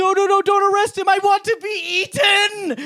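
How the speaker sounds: very high, loud, frantic, desperate pleading shriek. Recounting a movie scene, retelling a character's scream. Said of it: "Just screaming".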